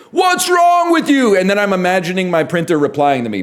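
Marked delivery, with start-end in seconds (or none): 0.2-1.4 very high, screamed outburst. Retelling screaming at a printer that won't work: retelling a scream. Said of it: "I'm like screaming at my printer".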